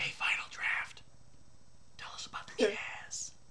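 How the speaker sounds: whispering.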